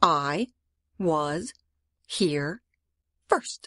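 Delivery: drawn out slowly, low, deliberate, each word placed. Repeating the claim to others who want to dig there, said slowly. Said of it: "Let me say it again slowly".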